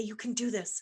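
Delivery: soft, really light, featherweight voice. Recalling what they used to tell themselves before studying, really light voice. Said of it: "that was a really light voice".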